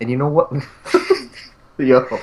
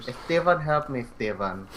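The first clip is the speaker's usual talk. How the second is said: put-on Filipino accent, quieter; 9 dB quieter than usual. Joking around with friends, calling out for help, in a filipino accent. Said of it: "You sounded so Filipino right there".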